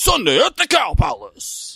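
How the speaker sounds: very high, drawn-out, weird piratey announcer voice. Imitating a dirt bike commercial announcer: weird piratey commercial announcer voice. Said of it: "the same dude that does this voice".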